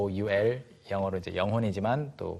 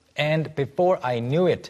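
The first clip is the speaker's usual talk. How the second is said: very slow, careful reading. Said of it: "teacher modeling slowly".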